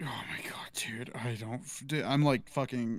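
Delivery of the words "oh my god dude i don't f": exhausted, worn-out, halting, broken-off rambling delivery. Trying to explain a call to another speaker, sounding exhausted. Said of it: "You're exhausted".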